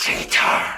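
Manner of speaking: hissing voice. Game narration: an invisible presence behind a player hisses into their ear. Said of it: "A voice hisses in your ear".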